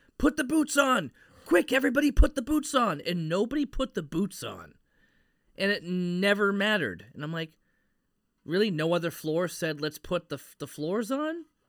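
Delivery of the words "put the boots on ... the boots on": very high, loud urging yelling. Speaker recalls yelling at the TV while watching: retelling a yell at the TV. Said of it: "I kept yelling at the TV".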